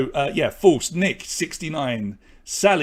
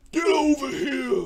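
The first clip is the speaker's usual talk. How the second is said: very high-pitched character voice, fully in character; 12 semitones higher than usual. Doing an impression between quiz questions: Sub-Zero impression. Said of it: "That's my best, uh, Sub-Zero impression there".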